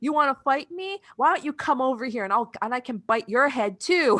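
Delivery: mocking, taunting, put-on voice. Retelling a scene, the speaker acts out the fox picking a fight: mock-taunting. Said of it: "the fox is trying to pick a fight".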